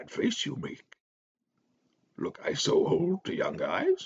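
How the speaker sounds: frail, cheerful, very high voice, swooping way up. A script reader voices Yoda speaking to Luke in the cottage, Yoda's frail, cheerful voice. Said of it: "his voice, though cheerful, seems weaker".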